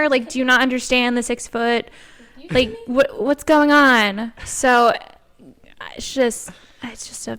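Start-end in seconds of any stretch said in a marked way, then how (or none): none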